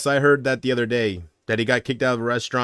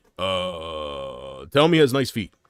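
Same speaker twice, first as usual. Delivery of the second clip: low, slow, deliberate delivery, "uh" dragged out; 6 semitones lower than usual. Imagining a world leader's reaction at a negotiation: Barack Obama impression. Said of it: "Obama's gonna be like".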